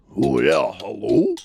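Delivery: loud, rough, gruff, rasping character voice. Demonstrating one of five recorded character voices for a routine: gruff voice. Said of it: "We have a gruff voice".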